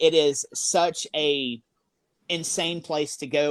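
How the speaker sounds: slow, drawn-out, emphatic delivery. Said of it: "It is such a crazy place to go".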